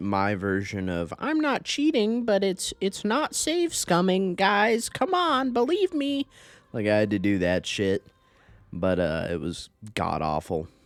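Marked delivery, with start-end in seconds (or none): 1.2-6.3 put-on, mocking nerd voice, very high pitched. Describing a tedious game campaign with autosave reloading: mocking nerd voice. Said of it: "I need to not do the mocking nerd voice".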